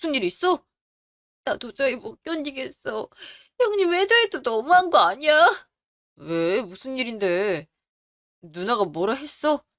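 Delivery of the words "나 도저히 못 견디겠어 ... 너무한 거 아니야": tearful, sobbing, crying while talking. Answering a spouse who asks if she is crying: crying while talking. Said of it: "당신 울어?".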